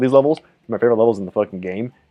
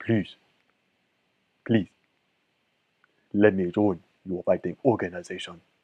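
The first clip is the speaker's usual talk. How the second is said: exaggerated, put-on, very deep behemoth voice; 3 semitones lower, 9 dB quieter than usual. Voicing a seven-foot behemoth who kills bears, in a put-on very deep voice. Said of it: "I don't know how fucking deep that voice can get".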